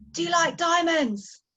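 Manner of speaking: very high, shrill, loud shout. Retelling how a man at the plane's edge turned around and shouted: retelling a shout. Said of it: "he shouts to me".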